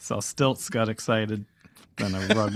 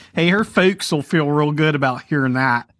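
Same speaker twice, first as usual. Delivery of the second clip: raised, higher-pitched fake Pittsburgh accent; 6 semitones higher, 7 dB louder than usual. Repeating a joking line about her folks: put-on Pittsburgh accent. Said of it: "you're kinda doing Pittsburgh at the same time".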